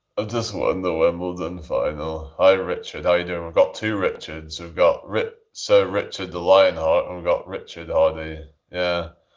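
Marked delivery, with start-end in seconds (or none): 0.2-2.4 said with zero enthusiasm. Imitating a tennis player announcing a win: Andy Murray impression, unenthusiastic. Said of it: "Andy Murray that sounds so un-, unenthusiastic".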